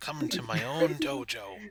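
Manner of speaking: elderly, old kung fu master put-on voice. Describing a character who ushers people into his dojo, in an old kung fu master voice. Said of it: "he's got like an old like kung fu master voice".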